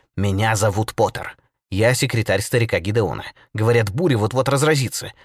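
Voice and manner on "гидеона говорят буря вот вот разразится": plain reading voice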